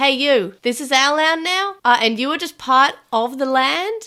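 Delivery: loud, put-on Australian accent. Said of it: "playing Australians".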